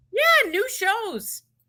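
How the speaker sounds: high-pitched, very strong Canadian accent. Chatting about the revived show on MTV, sounding super Canadian. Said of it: "I just sounded super Canadian".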